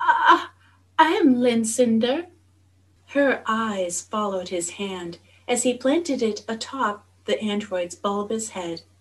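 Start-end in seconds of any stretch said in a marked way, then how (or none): 0.0-2.3 high-pitched, slow, halting, stuttering delivery. Staring at the prince's chest, she introduces herself, stammering. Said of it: "she stammered".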